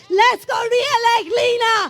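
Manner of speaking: emotional, loud, high, tearful crying shout. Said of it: "gonna get emotional now".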